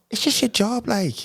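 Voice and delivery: high-pitched Scouse accent, Cork accent drifting into Scouse. Asked by the others to do a Cork accent, doing a Cork accent coming out Scouse. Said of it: "that was Scouse".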